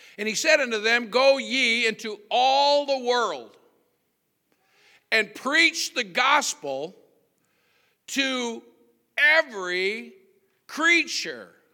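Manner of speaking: slow, deliberate, broken reading. Speaker reading a Bible verse aloud to listeners, very slow, deliberate reading. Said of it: "I'm reading that slow on purpose".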